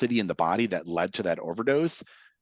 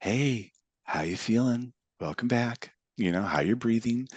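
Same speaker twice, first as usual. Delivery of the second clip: public-radio counsellor delivery, therapist tone. Demonstrating how to greet someone as they reorient, in an NPR therapist tone. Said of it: "that N P R therapist tone of voice".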